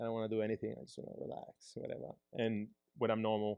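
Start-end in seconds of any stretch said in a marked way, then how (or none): 0.0-2.1 breathy, mellow, laid-back, put-on Peruvian accent. Showing how the speaker talks after smoking weed, in a chill Peruvian voice. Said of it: "If I do weed, I'm Peruvian. I'm just chill".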